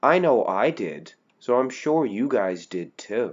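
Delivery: soft, tongue-in-cheek, sarcastic little voice. Wrapping up a comparison video for viewers, in a little sarcastic voice. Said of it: "I'm doing that little sarcastic voice".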